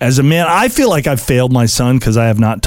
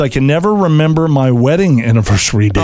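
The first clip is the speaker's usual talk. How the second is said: ordinary delivery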